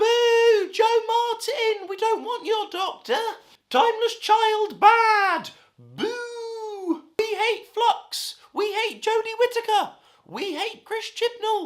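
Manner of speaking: very high, stupid-sounding booing cartoon heckler voice.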